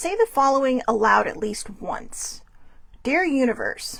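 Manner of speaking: ordinary delivery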